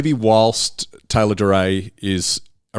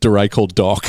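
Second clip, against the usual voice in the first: normal talking voice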